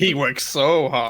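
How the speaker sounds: slow, drawn-out sarcastic drawl. Imitating another speaker's remark back at him: imitating a sarcastic tone. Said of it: "you sounded like that was sarcasm then".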